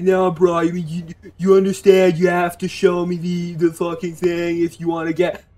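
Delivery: fake, annoying, put-on American accent. Retelling what an annoying man told him, in a put-on american accent. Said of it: "I'm giving him an American accent".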